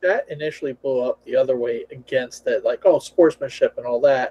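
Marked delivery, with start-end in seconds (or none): none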